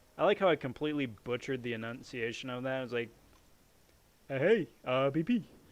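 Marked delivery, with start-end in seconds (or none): 4.3-5.4 hammy, slow, drawn-out cartoon bear voice. Mocking own mispronunciation of a word: Yogi Bear voice. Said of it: "Like I'm Yogi Bear or something".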